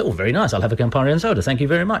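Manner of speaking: normal talking voice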